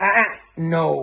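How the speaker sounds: disapproving, corrective tone. Trainer shows the tone that tells a dog it did wrong, disapproving correction tone. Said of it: "that ch- tone in your voice".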